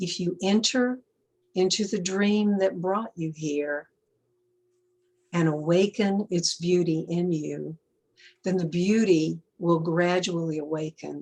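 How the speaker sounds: usual speaking voice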